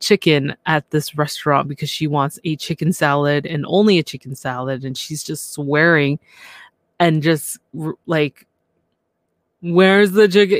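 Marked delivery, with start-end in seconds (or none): 9.7-10.6 put-on drunk woman voice, higher and louder. Retelling a woman's complaint at a restaurant: imitating a drunk woman. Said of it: "You do a better drunk voice".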